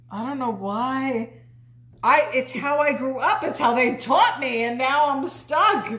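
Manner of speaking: slow New Jersey accent, "why" drawn out. After being told they talk funny, speaker explains why, new jersey accent. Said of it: "You guys talk funny in Jersey".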